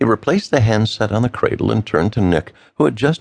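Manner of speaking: ordinary delivery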